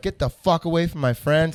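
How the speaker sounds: acted, angry screaming. Retelling confronting a stranger on the hot tub edge: retelling a scream. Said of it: "screaming at this guy".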